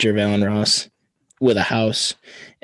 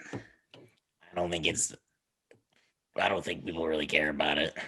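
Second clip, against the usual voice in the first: trach-device-like voice, lower and quieter; 5 semitones lower, 13 dB quieter than usual. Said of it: "you sound exactly like Pat Mahomes".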